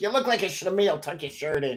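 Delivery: put-on warm, fatherly older man voice.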